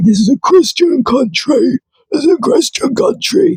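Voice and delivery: derisive, scornful mocking parody. Retelling what the group members say: mocking imitation of the group. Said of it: "then you turn around and say".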